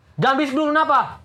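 high, sudden, angry outburst. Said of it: "Kamu marah?".

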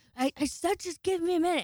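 put-on, high-pitched yelling shout. Retelling what the partner said through a locked door: imitating someone yelling. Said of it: "you yelled again".

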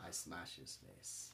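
hushed, breathy whisper in a fighter voice. Answering a mock interview question about the fight: Khamzat Chimaev impression. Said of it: "There was Hamza Chimaev".

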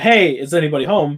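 usual speaking voice

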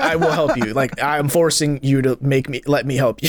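plain

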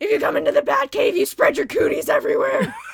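very high, very loud, strained, failed heroic voice. Play Batman warning girls to stay out of the Batcave, in a bad Batman voice. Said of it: "I can't do a Batman voice".

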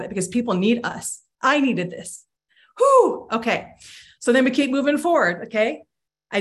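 emotional, teary-eyed voice, right on the edge of crying. Speaker urging listeners to celebrate their health and move forward: teary-eyed. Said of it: "i'm getting teary-eyed even just talking about".

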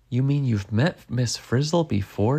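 ordinary delivery

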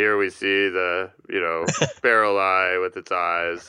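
flat, monotonous, dead-level narrating voice, like a researcher. Speaker describing the narration of a famous deep-sea video: Bruce Robison monotone impression. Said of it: "take his sort of scientist monotonous".

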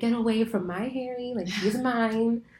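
slow, sassy, possessive bird voice. Voicing a pet bird from a book chapter: mock sassy bird. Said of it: "She's very sassy".

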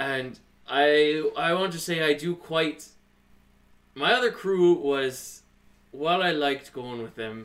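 emotional, pouring out loudly.

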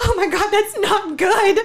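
mock alarmed, panicked outburst, loud and drawn out. Retelling her reaction to an ultrasound result: imitating her own panicked words. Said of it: "I, like, panicked".

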